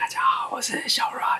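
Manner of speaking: hushed, barely voiced whisper. Introducing the podcast episode while hiding to record, speaking very quietly. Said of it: "那为什么讲话要这么小声".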